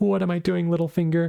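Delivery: mock tearful, high-pitched sobbing and crying. Retelling a scene where Lysa cries to Littlefinger: imitating Lysa crying. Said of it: "Lysa just cries like".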